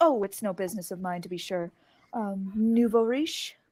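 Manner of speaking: snooty, pretentious, snobbish manner. Playing a character in a scene who remarks on someone: pretentious character. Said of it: "Pretentious bitch".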